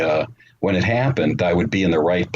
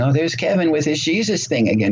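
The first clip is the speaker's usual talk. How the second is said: teasing, mocking tone, pitched up; 9 semitones higher than usual. Retelling how his mother made fun of him: imitating his mother mocking him. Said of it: "She talked like this".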